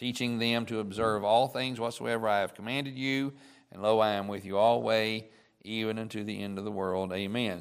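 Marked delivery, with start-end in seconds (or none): none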